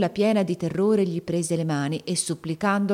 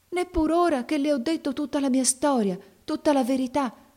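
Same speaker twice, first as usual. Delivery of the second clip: aghast, disbelieving, dismayed, pitched up; 9 semitones higher than usual. A young girl pleading with a priest who refused her, dismayed. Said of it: "domandò sgomenta la giovanetta".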